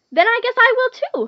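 cheerful, happy voice pitched very high. Reading a polliwog answering a caterpillar, happily. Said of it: "the polliwog said happily".

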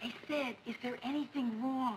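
hushed, whispered. Asking a question beside a sleeping man, not wanting to wake him, whispering. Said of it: "I'm whispering because I don't want to wake Joe".

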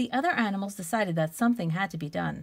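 ordinary delivery

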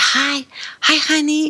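whispering. Retelling how Mike greeted her when he came in, retelling a whisper. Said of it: "he whispered".

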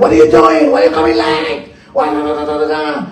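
acted-out screaming rant, high-pitched. Retelling how a boss puts people down: imitating a screaming boss. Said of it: "he's screaming".

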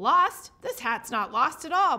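loud, booming, grouchy snowman bellow. Narrator reads the snowman answering Rodney, Mr. Blizzard bellowing. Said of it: "bellowed Mr. Blizzard".

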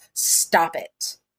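grave, deadly serious tone. A man tells someone straining against a chain to stop, deadly serious. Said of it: "The tone in his voice was deadly and serious".

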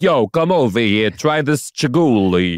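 Italian-flavored Staten Island accent. A co-host riffs on the word Chihuly, in a Staten Island Italian accent. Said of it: "That's like Italian food from Staten Island".

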